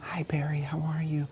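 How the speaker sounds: soft, gentle, low-key, slightly high voice. Mirroring a soft, quiet client when greeting them, soft and quiet. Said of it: "When you get that soft, quiet client".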